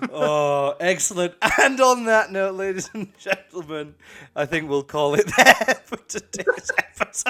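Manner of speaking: giggling, talking through laughter. Host closing today's episode while unable to stop, laughing while talking. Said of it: "I can't stop laughing".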